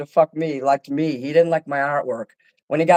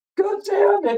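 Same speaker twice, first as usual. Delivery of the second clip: put-on very high, big-baby blubbering crying. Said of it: "He was crying like a big baby".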